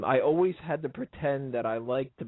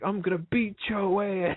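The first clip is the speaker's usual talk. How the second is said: raised, pitched-up, clear voice; 8 semitones higher than usual. Retelling how Mark Henry talks to the camera: Mark Henry impression. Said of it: "and he's just like".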